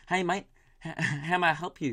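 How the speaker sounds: slow, drawn-out put-on New Zealand accent. Retelling what the kid at Macca's said, in a New Zealand accent imitation. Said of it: "And I've lost the accent".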